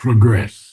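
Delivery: progress with stress on second syllable -gress. Correcting a reader's pronunciation: stress on second syllable of progress. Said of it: "the accent has to be on the second syllable".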